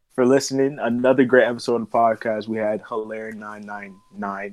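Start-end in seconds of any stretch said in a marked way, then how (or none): 3.3-4.5 heavy stress on every nine, repeated three times. Listing guests at the end of an episode: heavy emphasis on NINE NINE NINE. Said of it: "Why you put so much emphasis in that shit?".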